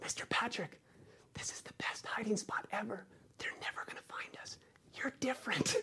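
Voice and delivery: tiny, sweet, cute, very hushed little whisper. Retelling what a child said while hiding under a table: imitating a cute little whisper. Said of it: "in the cutest little whisper".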